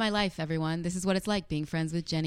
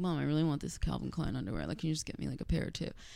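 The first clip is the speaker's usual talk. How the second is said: put-on quiet voice, quieter; 2 semitones lower, 5 dB quieter than usual. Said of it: "I said it really quiet".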